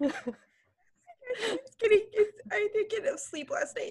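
very high words, laughed and giggled through. Podcast host with no sleep opens the show: laughing hard. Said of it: "so now I'm like hilariously laughing".

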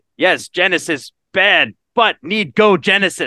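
alien voice speaking in broken English. Retelling how he started talking like the movie's alien: broken alien voice. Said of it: "started talking like the alien".

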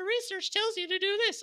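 high squeaky cartoon voice. Mocking a junior analyst pitching research to the site's owners: Mickey Mouse voice. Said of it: "I'm just going to keep on using this Mickey Mouse voice".

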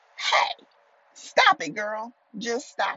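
acted-out, high-pitched, self-scolding yell. Scolding herself out of second-guessing a prayed-for change: yelling at herself. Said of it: "Sorry if I'm yelling in your ear".

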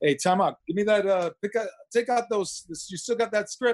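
tough Italian father voice. Retelling what the father said while driving: imitating his tough Italian father. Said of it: "my father's, like, this tough Italian guy".

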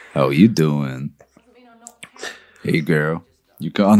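very low, sexy, swooping fake American accent. Challenged to say something sexy in a sex-off, using a sexy put-on American accent. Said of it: "I'm putting on an American accent".

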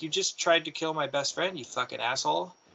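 play-acted crying, tearful and accusing tone. Retelling what a crying friend said: imitating someone crying. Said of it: "and she was crying".

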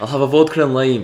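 put-on Scottish brogue on every word. Retelling what a man said when asked to do his accent again, Scottish accent. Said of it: "He goes".

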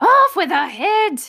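shrill shout, as loud as possible. Narrator reading the queen's line to Alice at the trial: shouting at the top of her voice. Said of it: "shouted at the top of her voice".

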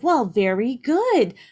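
cheeky, sassy, perked-up tone. Speaker retelling how a man perked up when told he was in Bruges, mock-sassy tone. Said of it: "he has like a kind of a sassy tone".

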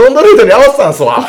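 loud, very high-pitched voice. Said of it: "ミッテラさんのモノマネしてるやろ".

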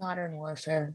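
sorrowful, very hushed, very quiet voice. Naming a pick in a game vote, sounding sad. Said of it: "she sounded so sad".

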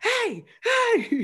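put-on high-pitched hollering yell. Retelling spotting a man a week later, imitating yelling across the street. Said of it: "like yelling across the street".

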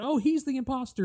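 mock little boy screaming, very high and shrill. Retelling a TikTok, the speaker quotes a little boy: imitating a screaming little boy. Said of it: "the little boy screaming that".

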